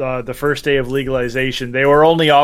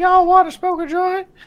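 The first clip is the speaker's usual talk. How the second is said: put-on cartoon stoner voice, higher. Doing a South Park impression for the others: Towelie voice. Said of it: "I was going for Towelie".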